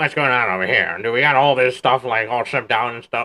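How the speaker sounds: put-on grumbling, cranky, grumpy old man voice. Imitating a new boss checking on shipping, in a Squidward voice. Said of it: "but with a Squidward voice".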